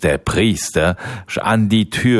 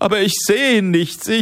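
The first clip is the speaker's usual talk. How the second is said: pleading, begging tone at much higher pitch; 12 semitones higher than usual. A man answering his wife, pleading. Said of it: "flehte der Mann".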